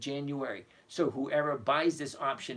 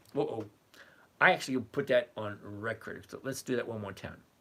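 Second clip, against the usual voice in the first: normal talking voice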